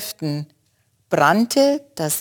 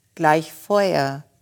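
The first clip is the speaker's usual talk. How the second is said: ordinary talk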